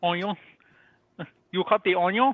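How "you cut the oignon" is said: mock Cajun pronunciation of onion, higher. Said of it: "the way that they say onion".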